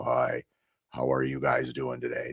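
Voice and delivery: very low, hoarse and gruff, soft voice. Showing how a greeting will sound with allergies: gruff hoarse voice. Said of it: "so I'm gonna sound a little gruff".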